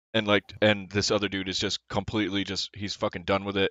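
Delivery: ordinary delivery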